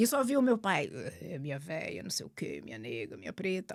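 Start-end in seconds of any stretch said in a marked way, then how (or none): 1.2-3.8 much lower, softer deep-voiced murmur. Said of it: "só dava pra ouvir o sussurrar da voz do meu pai".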